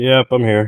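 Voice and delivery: defeated, dejected voice. Answering the commentators who ask if he is live: defeated. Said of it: "That sounds defeated".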